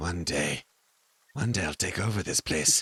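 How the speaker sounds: low, scheming cat voice. Voicing a cat that secretly plans to take over: voicing a scheming cat. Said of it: "she's a really great cat actor, and she's like".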